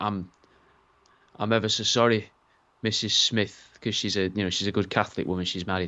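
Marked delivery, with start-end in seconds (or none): 0.0-3.8 apologetic bedside doctor voice. Acting out a doctor telling the mother about a botched C-section: playing a doctor giving bad news. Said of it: "the mother and he's like".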